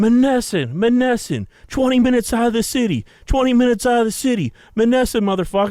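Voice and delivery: frantic, shrill, very high repeated looping scream. Recalling a fight in their twenties, the speaker imitates a dude who starts screaming. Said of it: "this dude just starts screaming".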